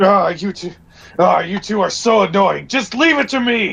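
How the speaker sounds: cranky, short-tempered, irritated hangry tone. Arguing with two companions about breaking out, a character sounds hangry. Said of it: "You sound pretty hangry".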